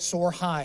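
normal talking voice

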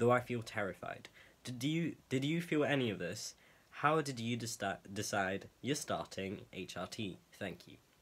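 plain

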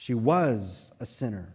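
emphasis on "was", pitch falling at the end.

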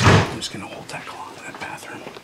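whispered.

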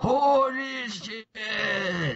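imitated elderly male voice. Speaker is reminded of a scene and does Joseph Joestar's old man voice. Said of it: "going is his old man voice".

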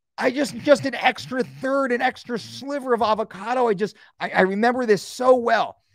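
normal talking voice

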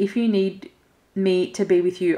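ordinary talk

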